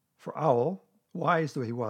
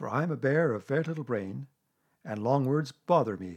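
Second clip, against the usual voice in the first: usual speaking voice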